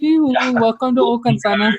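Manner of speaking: very high, put-on cartoon-style character voice. Comparing the door greeting to the guy in Frozen: imitating the guy from Frozen. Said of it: "Frozen, where the guy's like".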